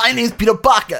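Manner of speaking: loud high-pitched yell.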